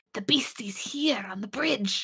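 put-on whisper. Retelling a scene where someone calls the captain, imitating a whisper. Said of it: "He's whispering".

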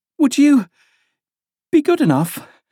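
very high, breathless, out-of-breath panting. After running a little further, she asks the king to stop, panting. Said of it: "Alice panted out".

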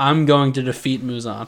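ordinary talk

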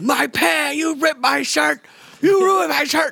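shrill, very high, lunatic-sounding yelling. Acting out Nicolas Cage in an insane film scene, Nicolas Cage yelling like a lunatic. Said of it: "just yelling like a fucking I, lunatic".

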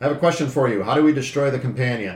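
dead-serious yell, not threatening. In the role-play, a character yells up the stairs: serious, non-threatening yell. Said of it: "yell up the stairs in a serious but not a threatening voice".

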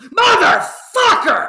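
very loud, very shrill, high-pitched yell. Retelling a voice actor swearing at someone: imitating someone yelling. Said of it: "was he actually yelling that".

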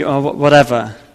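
meek, resigned tone.

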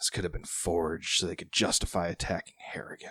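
half-hearted stage whisper. Narrating a man leaning over to someone next to him, barely lowered voice. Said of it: "not really trying to lower his voice that much".

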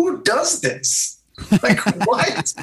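mocking, incredulous voice pitched way up in disbelief. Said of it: "I'm thinking to myself".

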